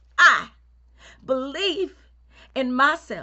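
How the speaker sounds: loud, high voice with a pause after each word.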